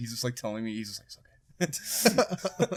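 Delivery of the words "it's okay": hushed, soft, quiet whisper under the breath. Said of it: "he just whispers stuff".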